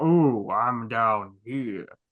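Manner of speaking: very slow, loud, drawn-out guttural creature voice from throat. Asked to give a taste of Audrey Two's voice: deep guttural Audrey Two voice. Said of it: "it's like a deep".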